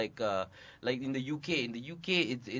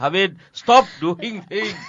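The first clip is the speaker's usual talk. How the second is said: mock scolding voice, higher and louder; 7 semitones higher, 17 dB louder than usual. Showing how the director scolds actors for ad-libbing: imitating Lee scolding actors. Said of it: "That's my impression of Lee".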